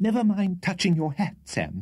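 fussing, very high-pitched voice. Reading a story aloud, Mr. Winkle speaks to Sam in a hasty voice.

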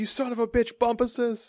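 shrill, pitched-way-up, sudden yell. Retelling a movie scene where the dad runs out the door: imitating someone yelling. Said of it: "just yells".

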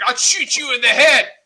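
put-on raging gamer scream, high-pitched and yelled. Quoting an opponent during an online game, retelling a screamed threat. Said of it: "starts screaming out".

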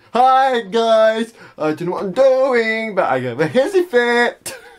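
very high-pitched, loud delivery. Mocking how a YouTuber says his intro: Comedy Shorts Gamer intro impression. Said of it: "he looks like he's gonna bow for someone".

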